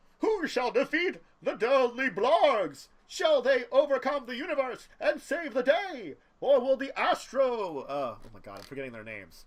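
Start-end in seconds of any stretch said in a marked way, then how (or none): 0.2-7.8 bad radio announcer voice, pitched very high. Playing a game with a co-player, narrating the story in a bad radio announcer voice. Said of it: "I feel like I have to do a bad, like, um, radio announcer voice".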